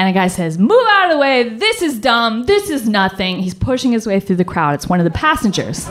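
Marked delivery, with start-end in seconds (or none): 0.6-3.4 put-on New York accent with a dismissive, brushing-off tone. Retelling a subway passenger pushing through the crowd: loud New York accent. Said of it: "this loud New York accent bursts over".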